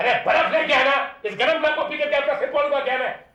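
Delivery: yelling in anger. Shouting back at a woman who asks why he is yelling, angry shouting. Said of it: "चिल्ला मत".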